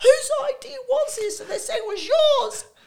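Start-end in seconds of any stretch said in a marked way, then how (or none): 0.0-1.4 high, raised, loud yelling voice. Recounting being pulled along on a rope on the Harbour Bridge, retelling a yell. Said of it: "And I'm yelling at them".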